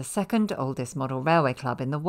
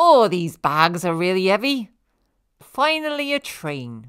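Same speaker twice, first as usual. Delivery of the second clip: small, little high-pitched character voice; 5 semitones higher, 6 dB louder than usual. Presenting a model railway layout, giving a figure a little model-figure voice. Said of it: "give your model railway characters little voices".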